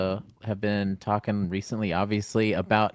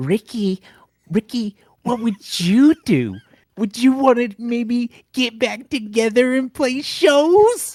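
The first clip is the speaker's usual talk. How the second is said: shrill, very high, loud voice; 14 semitones higher, 7 dB louder than usual. Redoing the friend's question in her voice, imitating a friend's voice. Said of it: "let me start again in your voice".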